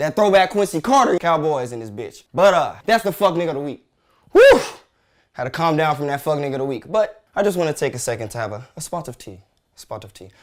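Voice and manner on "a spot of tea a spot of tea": horrible fake British accent, very soft. Talking to his audience, the speaker puts on a bad British accent. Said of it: "British accent is horrible".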